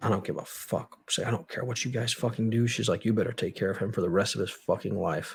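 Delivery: put-on, furious, cursing outburst. Retelling a mother's outburst at visitors: imitating a furious mother. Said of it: "she's furious at this point".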